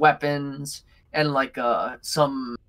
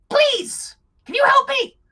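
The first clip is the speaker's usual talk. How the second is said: very high, raised, pleading woman's voice; 6 dB louder than usual. Voicing a woman chained to an altar, redoing the line: chained woman's voice. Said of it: "That works".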